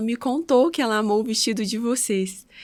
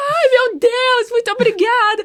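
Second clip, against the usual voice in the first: put-on shrill, very high, very loud, elated; 14 semitones higher, 9 dB louder than usual. Retelling a bride learning her dress was already paid: imitating someone overjoyed. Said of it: "ela ficou tão feliz".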